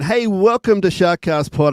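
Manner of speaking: high radio announcer voice. A podcast host restarting the episode intro, radio voice. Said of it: "I got the radio voice on".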